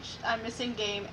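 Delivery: ordinary talk, nothing marked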